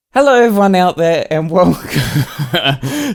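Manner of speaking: high, loud words breaking up with laughter. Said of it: "I'm laughing".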